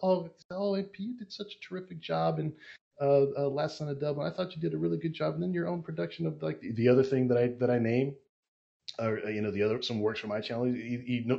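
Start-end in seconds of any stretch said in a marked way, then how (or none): 0.0-6.4 soft-spoken, gentle, polite, courteous tone. Retelling a polite fan greeting the group: imitating a soft-spoken fan. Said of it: "really soft spoken".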